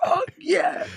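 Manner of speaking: small, hyped mock cheer at talking volume. Retelling own reaction while watching a fight: imitating own screaming. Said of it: "It's because I was fucking screaming".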